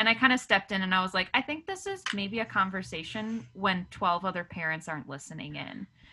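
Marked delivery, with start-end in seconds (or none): none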